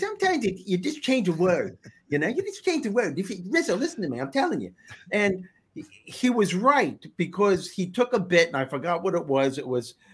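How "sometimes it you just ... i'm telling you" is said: animated celebrity-style voice, pitch swinging up and down. Retelling advice from Jay Leno when starting out: Jay Leno impression. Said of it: "the way he talks like this".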